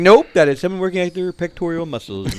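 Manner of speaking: small, high, silly little voice. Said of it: "he had this little silly voice".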